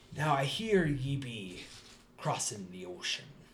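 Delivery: put-on mildly drunk, tipsy voice. Voicing a mildly drunk captain greeting the party: mildly drunk captain voice. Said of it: "mildly drunk, definitely on drugs captain".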